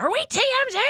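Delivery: loud, high-pitched yelling.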